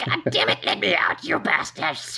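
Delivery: furious, frenzied hag voice, sweetness gone. Voicing a trapped green hag who turns furious: hag shouting angrily. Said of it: "her sweet kind of, "Help me" voice becomes".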